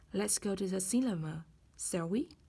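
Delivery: rising tune at the end of "shall we".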